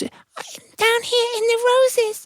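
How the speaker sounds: put-on teeny, tiny ant voice, very high and very slow. Telling a story, a voice calls up from the rose bushes in a tiny little ant voice. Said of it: "they heard the voice".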